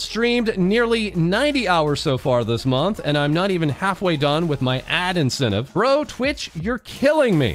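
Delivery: plain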